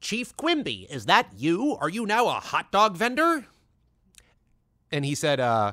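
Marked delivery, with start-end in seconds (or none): 0.0-3.4 high character voice with swooping, swinging pitch. Retelling doing a requested voice in front of a legend: Inspector Gadget voice. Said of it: "do my Inspector Gadget voice in front of him".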